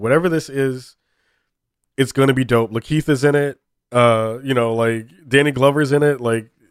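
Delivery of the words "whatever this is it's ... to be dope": usual speaking voice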